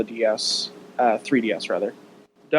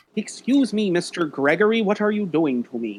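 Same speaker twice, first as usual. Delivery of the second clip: cartoonish, high, put-on puppet character voice; 7 semitones higher than usual. Describing riding a monster, speaker voices the monster in a Muppet voice. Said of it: "putting like a Muppet voice over".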